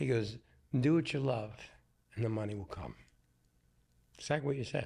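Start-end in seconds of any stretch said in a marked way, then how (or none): 0.8-2.9 put-on broken Italian accent. Retelling a father's advice, imitating father's broken Italian accent. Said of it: "he had the broken accent".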